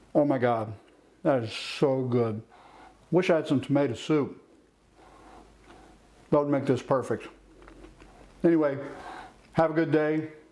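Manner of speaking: talking while chewing with mouth full. Tasting a grilled cheese sandwich in a cooking video, talking with mouth full. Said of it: "talking with my mouth full".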